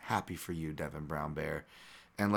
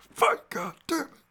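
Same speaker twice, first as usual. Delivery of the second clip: very loud, very high, shrill hollering; 8 dB louder than usual. Quoting the man whose job is to pump the fighter up, retelling a loud yell. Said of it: "now I don't have a voice".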